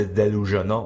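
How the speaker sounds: normal talking voice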